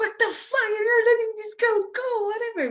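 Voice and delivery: play-acted, very high, shrill shrieking scream. Retelling how someone screamed at the immigration office: imitating someone screaming. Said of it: "screaming at them".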